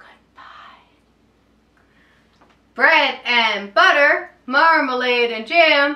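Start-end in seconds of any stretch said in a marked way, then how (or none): 0.0-0.8 extremely soft whisper, as quiet as possible. Leading a goodbye rhyme, saying goodbye as soft as possible. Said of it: "Let's say goodbye as soft as we can".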